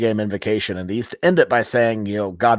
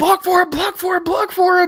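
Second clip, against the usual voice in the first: mock frantic repeated yells, very high, urgent; 3 dB louder than usual. Retelling cheering from the stands during a play, retelling own screaming. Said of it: "I just screaming".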